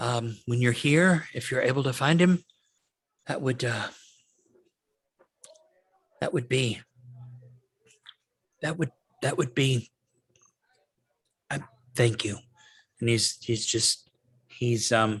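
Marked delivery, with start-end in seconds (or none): 0.0-12.4 shaken voice, on the verge of tears. Voicing a young man offering free food and lodging, shaken, on the verge of tears. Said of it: "definitely shaken".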